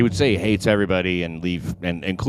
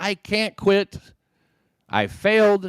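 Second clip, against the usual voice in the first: mock very slow, stretched-out, drawn-out shout; 12 semitones higher than usual. Acting out what he told her, then apologizing: imitating someone yelling. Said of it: "Excuse me if I yelled too hard".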